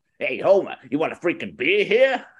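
put-on cartoon voice with swooping pitch. Asked for a character, doing a voice on request: Moe voice.

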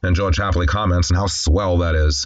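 ordinary talk

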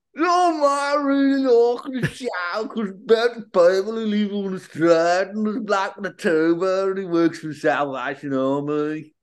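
put-on Birmingham accent. Asked to do it again, the speaker retells a show's plot in a birmingham accent. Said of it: "Do it again".

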